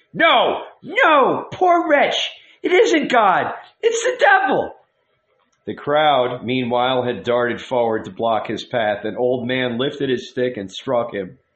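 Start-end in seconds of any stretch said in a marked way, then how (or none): 0.2-4.7 very high, drawn-out, swooping shouting. Narrating a woman who answers a voice she seems to hear: shouting. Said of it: "she shouted".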